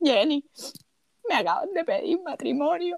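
mock tearful voice. Retelling a friend's tearful phone call about her engagement: imitating Gerani crying. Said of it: "Me encanta tu caracterización porque yo sueno así de horrible cuando estoy llorando".

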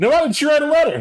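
loud, very high comedic voice. Voicing a small red dragon heard on the wind: Eddie Murphy voice. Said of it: "hear Eddie Murphy for a moment in a small red dragon form go".

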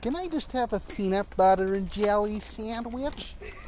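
put-on American teenage girl accent. Showing off the only impression they can do, American teenage girl impression. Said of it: "I can only really do an impression of an American teenage girl".

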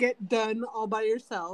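ordinary talk, nothing marked

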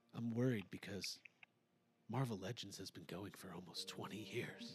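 very low, dropped, deep-voiced lament. Doing a mocking impression of Ryan over emotional piano music: imitating Ryan. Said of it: "I'm gonna do an impression of Ryan".

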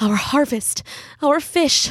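hissing, close to crying. Reading a mother's line as her daughter overhears her parents, hissed, near tears. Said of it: "Mother hissed, near tears".

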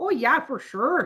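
put-on, laid-on Norwegian Minnesota accent. Speaker mocks how people talk in the speaker's home state: put-on Norwegian accent. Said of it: "It's a Norwegian accent".

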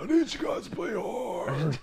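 very high, silly, mocking voice. Imitating a coach calling plays: Doc Rivers impression. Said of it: "Can't take that guy serious talking like that".

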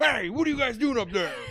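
put-on very high-pitched hollering, heckling yell. Recalling Hulk Hogan interrupting a movie in the theater, retelling Hulk Hogan's yell. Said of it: "yells at the".

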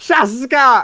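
piercing, high-pitched, shrill battle cry. Playing a character calling out underwater: yelling a word. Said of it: "I'm gonna yell".

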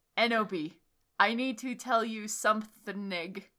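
solemn, weighty, very serious, grave voice. Reading a visitor's line at a hospital bed, handing over roses; very serious voice. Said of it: "He said in a V-serious voice".

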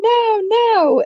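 high, whiny, mock sassy kid voice.

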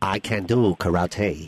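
slow, drawn-out, put-on Chinese accent. Answering a request to prove being the new Jackie Chan: Jackie Chan accent. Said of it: "That wasn't karate. That was an accent".

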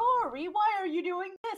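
very high loud outburst. Retelling how a teammate reacts during games: imitating Pichu getting loud. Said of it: "Pichu gets loud".

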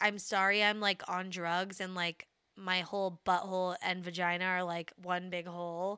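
ordinary talk, nothing marked

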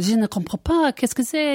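put-on French accent lady voice. Retelling a Paris cafeteria scene with an American ordering, quoting the French lady. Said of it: "the lady was going".

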